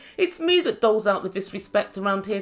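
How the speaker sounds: ordinary talk, nothing marked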